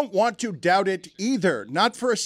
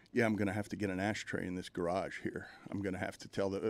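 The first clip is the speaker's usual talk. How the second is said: put-on muttering under breath, lower and quieter; 13 semitones lower, 16 dB quieter than usual. Retelling what Mike Ryan muttered in the garage: imitating Mike Ryan muttering under his breath. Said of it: "muttering under his breath".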